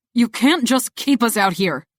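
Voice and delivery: snapped angrily. Reading a story aloud, voicing a character who snaps: angry snapping. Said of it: "I hear Atlas's angry voice as he snaps".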